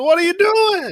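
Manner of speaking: put-on Italian accent. Voicing the creatures as very italian: put-on italian accent. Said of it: "They're all very Italian".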